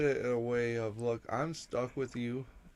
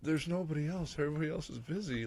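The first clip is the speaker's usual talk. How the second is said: mock sorrowful, really sad, mournful, downcast voice; 4 semitones higher, 3 dB quieter than usual. Retelling what a woman said to the speaker, imitating her really sad voice. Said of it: "Like in this really sad voice".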